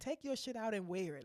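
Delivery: plain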